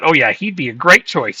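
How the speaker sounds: put-on sarcastic football-coach voice. Imitating how Pep answered about hiring Kompany: imitating Pep saying it sarcastically. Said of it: "I bet you Pep sarcastically said that".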